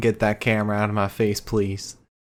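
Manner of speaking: mock words pushed out through sobs, tearful. Retelling the same backstage promo again: imitating Cameron Grimes crying. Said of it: "He was crying and saying".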